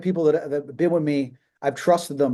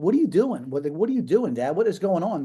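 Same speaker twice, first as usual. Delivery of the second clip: acted upset outburst. Retelling confronting their dad, acting out being upset. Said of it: "I was so upset".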